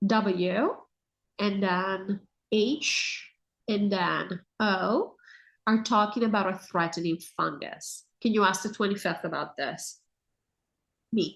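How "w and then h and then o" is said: each letter spelled out very slowly, one by one. Spelling out a name the speaker says they aren't allowed to say, very slowly. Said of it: "I'll say very slowly".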